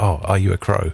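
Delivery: mock dim-witted voice. Imitating people who come up to the speaker, sounding idiotic. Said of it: "it makes it sound like everyone's an idiot".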